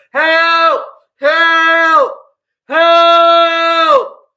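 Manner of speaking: very loud, very high, drawn-out shouts. Speaker demonstrating what they might do if trapped, shouting for help. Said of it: "So I'm shouting".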